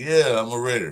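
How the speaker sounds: play-acted unenthusiastic, flat, zero-excitement delivery. Talking about the draft, a speaker imitates a drafted player, unexcited Tyree Wilson impression. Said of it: "is he really excited? No".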